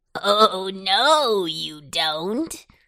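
very slow, thick, throaty, laughing voice. Narrating a Halloween tale, the runaway pumpkin answers a boy: Pumpkin's thick, throaty laugh. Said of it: "laughed Pumpkin in a thick, throaty sort of voice".

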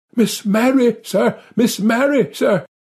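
breathless, high, gasped-out, alarmed. An old butler rushes into the room and gasps out his message: gasping out. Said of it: "he gasped out".

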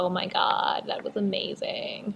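crackly, fried voice sliding into vocal fry. Speaker explaining vocal fry, doing a crackly Kardashian vocal fry impression. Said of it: "it kind of goes all crackly".

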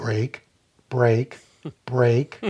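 calm, steady, low-key, unraised voice. Retelling what dad said during a botched U-turn, very quiet. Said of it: "very quietly just said".

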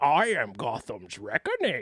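very low villain voice with swooping swings. Trying an impression after being coached by the others, Bane impression. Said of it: "This is [name] trying to do real bane".

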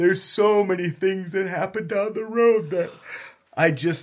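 talking through a yawn. Describing a show they loved and marathoned, yawning while talking. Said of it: "sorry, I'm yawning".

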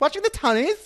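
shrill, very high, very loud voice.

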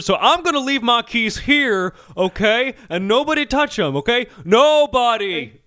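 loud, very slow, pointed delivery. Acting out a talk show host speaking to a crew member: imitating someone speaking very loudly. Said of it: "He's speaking very loudly to one of the crew members".

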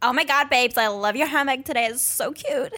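put-on American accent, done quite well. Asked to do an American accent on the spot: American accent. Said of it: "Can you do your best American accent?".

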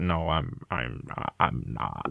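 very low, very slow, creaky drawl. Quoting a favourite film scene: Heath Ledger Joker impression. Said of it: "I'm sorry for doing the impression".

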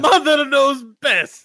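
very high-pitched, put-on Italian accent. Trying out a dwarf accent, the speaker slips into an italian accent. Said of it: "back to Italian".

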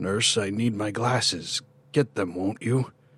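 thin, soft whisper. A narrator reads the plea of a second frail resident asking a passing nurse for help, as a thin, soft whisper. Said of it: "As I went by the first bed, a thin, soft voice called out from beneath the sheet. ... a frail voice whispered from one. ... a thin, soft voice called out from beneath the sheet".

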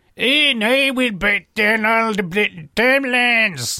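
Scottish accent impression. Describing traditionalists led by a Scottish woman: put-on Scottish accent. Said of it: "That's my Scottish accent".

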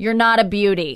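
put-on voice of an eighty-year-old woman. Retelling what an eighty-year-old woman tells the speaker: imitating an eighty-year-old woman. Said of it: "she'll tell me things like".

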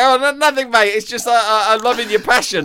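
high, panicked voice. Retelling a co-pundit's answer to an angry question: imitating Ian Wright sounding freaked out. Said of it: "Like that, freaked out".

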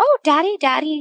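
put-on high, babbling little baby voice. Retelling someone calling out for Daddy: imitating a baby babbling. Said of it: "just, like, babbling".

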